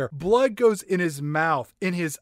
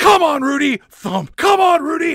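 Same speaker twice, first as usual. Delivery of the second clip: put-on scream, much higher and louder; 10 semitones higher, 8 dB louder than usual. Recapping the movie Outbreak, a reviewer acts out a doctor, imitating a doctor screaming. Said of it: "this doctor is just screaming".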